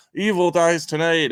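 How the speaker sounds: put-on very high, clumsy, badly acted shout. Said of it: "he's yelling".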